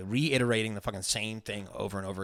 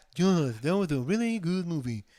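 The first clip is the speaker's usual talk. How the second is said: mocking put-on voice, higher pitched; 7 semitones higher, 3 dB louder than usual. Mimicking how the other speaker pitched a movie: impression of Joe. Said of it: "that was a good impression of it".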